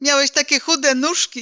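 high-pitched speech with giggling. Mom answers Dad as he recalls their first scout camp; giggling. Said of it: "zachichotała mama".

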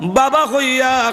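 weeping, tearful voice.

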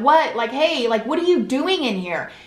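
put-on half-shouted, mild yell. Telling of being locked in, she acts out yelling through the door. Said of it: "I'm yelling like".

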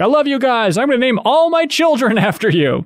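mock shrill shout, pitched way up. Recounting a scene, imitating Manny yelling. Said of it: "Manny yells out".

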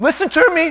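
voice cracking and breaking upward in pitch. Urging the listeners to hear a point, voice cracking. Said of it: "My voice just cracked".

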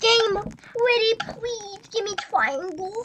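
put-on pleading baby talk with softened words. Begging the game during play, the speaker slips into baby talk. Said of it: "Baby talking it isn't gonna do it".

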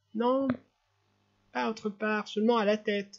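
weak, pained little voice. Narrator reads a sick little boy answering his mother, in a small suffering voice. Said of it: "de la même petite voix souffrante".

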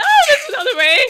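high, loud, panicked screaming.

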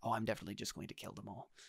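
very hushed, barely audible whisper. Running a tabletop game, the game master voices a character leading the players: whispering. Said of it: "he just whispers".

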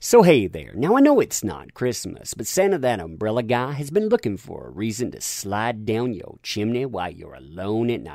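normal talking voice

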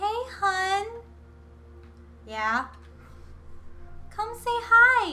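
sweet, gentle mom voice. Voicing a mom character calling her kid over: nice, kind voice. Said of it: "let me make a nice, kind voice".

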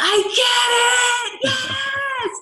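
very high, very slow, ecstatic joyful scream. Retelling how the guy going before them screamed: imitating joyful screaming. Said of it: "He was screaming like".

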